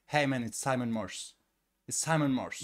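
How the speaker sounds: imitated American pronunciation. Retelling how a man says his own name, in a put-on American accent. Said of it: "son nom en ricain, il fait".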